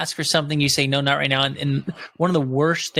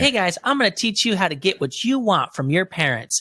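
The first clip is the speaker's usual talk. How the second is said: put-on high, little six-year-old kid voice; 5 semitones higher than usual. Retelling a funny video of a six-year-old kid: imitating a six-year-old kid. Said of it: "this kid saying".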